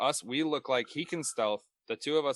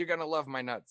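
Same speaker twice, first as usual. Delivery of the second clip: slightly high infomercial pitchman voice; 5 semitones higher than usual. Retelling a line from a Slap Chop commercial, imitating the Slap Chop pitchman. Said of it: "He's like".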